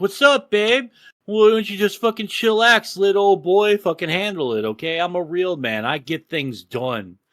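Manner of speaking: patronizing, cocky, condescending voice full of swagger. Speaker shows how you are supposed to talk to a woman: condescending. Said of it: "Be real condescending".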